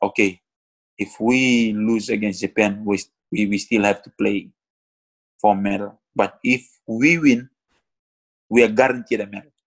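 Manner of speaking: plain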